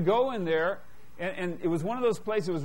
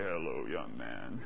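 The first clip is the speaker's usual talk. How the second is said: put-on very low, hushed, rasping, creaky, creepy old man voice; 7 dB quieter than usual. Retelling a story, the speaker quotes the man behind the desk: imitating a creepy old man's voice. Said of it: "he had the creepiest voice you ever heard in your life".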